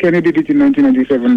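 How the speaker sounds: said too fast, rattled off very fast.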